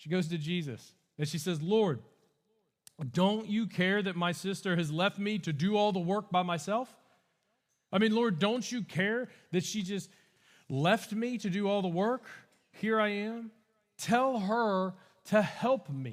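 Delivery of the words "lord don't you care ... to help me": put-on fed-up, angry, frustrated tone. Retelling Martha's complaint to Jesus: imitating an angry, frustrated Martha. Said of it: "she's angry, she's frustrated".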